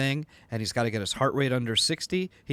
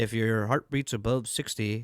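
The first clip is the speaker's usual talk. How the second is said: mock weird American accent. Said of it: "with that weird".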